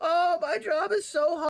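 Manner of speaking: put-on whiny voice. Mocking professional streamers who complain about their job: mocking complaining streamers. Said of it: "professional fucking streamers being like".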